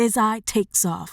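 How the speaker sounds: plain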